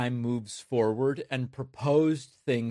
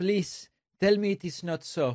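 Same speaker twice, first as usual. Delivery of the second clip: imitated Mexican Spanish accent, much higher; 6 semitones higher than usual. Speaker retells what a woman said to him: mexican spanish accent. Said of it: "of a Mexican person who learned to speak English as a second language".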